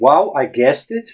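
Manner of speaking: plain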